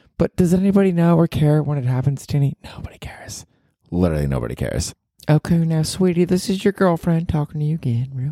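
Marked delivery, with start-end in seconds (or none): 5.3-8.3 fake Southern accent, higher. Playing a Southern girlfriend talking to her partner on the podcast: put-on Southern accent. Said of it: "you got a Southern accent down pat".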